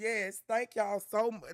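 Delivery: voice catching, choked up, fighting back tears. Thanking everyone gathered there: holding back tears. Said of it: "I'm trying not to cry".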